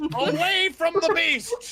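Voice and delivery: frantic, panicked, very high-pitched yell. During an argument over steering toward the beast, a character shouts; panicked shout. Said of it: "shake harder with more panic".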